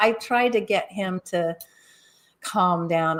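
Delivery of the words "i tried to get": plain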